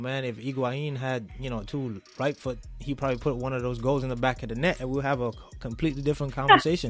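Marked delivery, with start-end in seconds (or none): none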